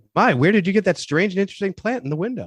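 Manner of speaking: very high, over-the-top cartoonish delivery. Retelling an actor's famous movie line: imitating a cartoonish line reading. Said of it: "it needs to be like a cartoon".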